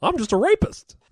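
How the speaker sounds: goofy, very high, loud cartoon clown voice. Told to say the line a certain way: silly clown voice. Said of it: "You should say it in a silly clown voice".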